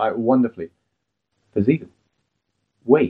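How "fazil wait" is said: put-on calm line reading. Discussing a film's opening, quoting the hero's line, imitating a calm delivery. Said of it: "he's so calm when he says it".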